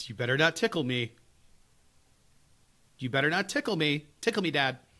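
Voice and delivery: put-on teasing child voice. Retelling how a daughter teases before a tickle: imitating a daughter's teasing. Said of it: "she'll be like".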